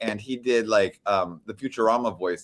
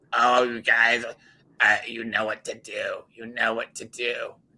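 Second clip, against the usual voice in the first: deliberate, unhurried creepy drawl, every word drawn out. Recalling funny radio guests, doing an Eric the Midget voice. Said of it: "And then Eric the Midget".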